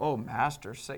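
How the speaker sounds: put-on deference laced with sarcasm. Retelling how Simon answered Jesus: imitating Simon's sarcastic tone. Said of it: "some sarcasm when he called Jesus master".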